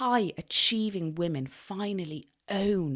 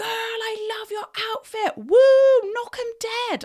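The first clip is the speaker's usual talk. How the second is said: very high, very loud, shrill, booming cheer; 10 dB louder than usual. Retelling a woman in a car cheering at the speaker, imitating a woman cheering loudly. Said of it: "cheering at me at the top of her voice".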